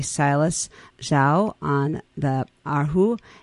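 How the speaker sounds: very slow, careful, deliberate delivery.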